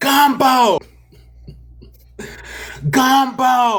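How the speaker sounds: very high-pitched, excited yelling. Retelling playing a word-guessing game: retelling yelling at the screen. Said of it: "but I'm yelling at my screen".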